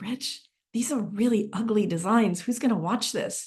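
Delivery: put-on whisper. Retelling a remark made during a studio tour: imitating own whisper. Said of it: "I whispered to Rich".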